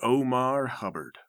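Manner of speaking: name said with dark, dramatic, ominous weight. Asking about the last guy and dropping his name: ominous. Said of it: "you dropped that name ominously".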